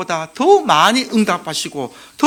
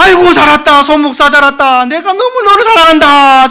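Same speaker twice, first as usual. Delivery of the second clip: put-on very loud, high, sobbing, overjoyed cry; 6 semitones higher, 10 dB louder than usual. Speaker tells a heaven story, acting out the welcome given to an arriving pastor: acting out weeping speech. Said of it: "막 울면서".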